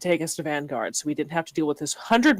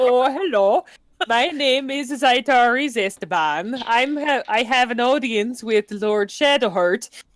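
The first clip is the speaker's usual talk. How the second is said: fake Swedish accent, higher pitch; 5 semitones higher than usual. Joking that the character could go swedish: put-on swedish accent. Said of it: "Or you could go Swedish".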